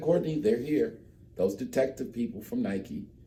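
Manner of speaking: mock cool, composed, very calm delivery. Retelling a phone call from a friend about visiting detectives: imitating Lou speaking very calmly. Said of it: "like, very calm".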